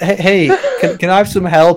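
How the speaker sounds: high, swooping, begging plea. Acting out an imagined scene: a homeless person asking for help.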